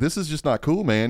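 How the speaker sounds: ordinary talk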